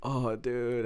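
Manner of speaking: put-on very sick, congested, runny-nose voice. Retelling turning down a hot pot invite: imitating own sick voice. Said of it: "you can tell from my voice that I was super sick".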